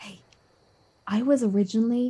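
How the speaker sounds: hushed whispered aside. Speaking about Zarin while Kobu can still hear, whispering. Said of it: "And I'm gonna whisper".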